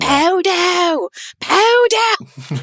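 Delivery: very high shriek, wildly swinging and swooping. Explaining Korean consonants she struggled with, speaker retells her own screaming. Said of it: "Because I was just screaming".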